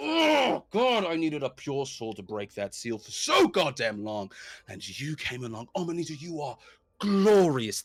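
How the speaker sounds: manic cackling with wildly swooping pitch. A storyteller voices a figure who laughs in an alleyway: maniacal laughing while talking. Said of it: "just starts maniacally laughing".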